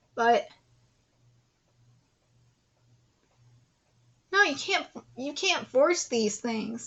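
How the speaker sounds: holding back tears. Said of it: "and I'm trying not to cry right now".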